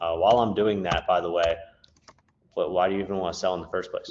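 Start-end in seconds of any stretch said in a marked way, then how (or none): 2.5-4.1 low, casual, offhand small-talk tone. Demonstrating a call to a property seller, lower, casual small-talk tone. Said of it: "I'm dropping my tone and I'm making it seem like it's just me creating small talk".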